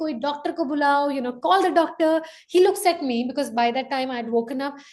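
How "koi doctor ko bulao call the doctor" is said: desperate, frantic, urgent, panicked pleading tone. Retelling what her husband screamed as their child shook, retelling his screaming. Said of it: "he's screaming".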